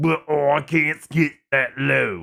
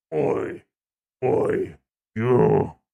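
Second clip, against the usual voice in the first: guttural growled voice from the throat; 3 semitones lower than usual. Speaker showing off voice acting, calls out in a guttural growl voice. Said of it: "the guttural growl of a vo- the voice".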